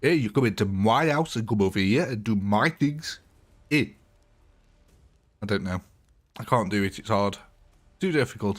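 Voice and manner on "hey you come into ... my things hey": attempted put-on South African accent. Trying out an accent they admit they can't do, in an attempted south african accent. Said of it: "It's like the South African accent".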